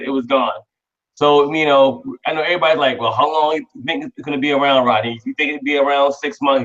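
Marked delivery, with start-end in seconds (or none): none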